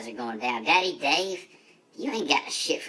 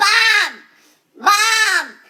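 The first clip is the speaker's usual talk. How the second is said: panicked screams, very high pitched and very loud; 12 dB louder than usual. Retelling a rolling crash, calling out for Bob after the stop: retelling a scream. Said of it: "And I'm screaming".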